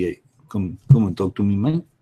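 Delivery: put-on mobster voice with French accent. Imagining what a mafia type might say; mafia guy in French accent. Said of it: "the mafia thing in a French accent".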